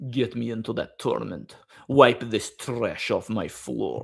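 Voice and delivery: put-on mock Russian accent. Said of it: "I love the Russian accent".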